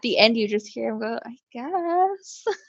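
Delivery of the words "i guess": put-on soft-spoken man's voice, higher and quieter. Retelling how a husband answers at the end of a recording: imitating a soft-spoken man. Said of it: "this really soft-spoken dude".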